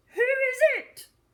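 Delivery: rough, gruff, very high-pitched, loud wolf voice. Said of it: "The wolf called out in a gruff voice".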